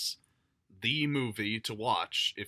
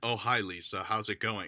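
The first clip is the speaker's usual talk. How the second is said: blank, emotionless, flat deadpan monotone delivery. Retelling an actor's first line in a film: imitating Greg Sestero's deadpan voice. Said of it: "In the most fucking deadpan, blank, emotionless voice".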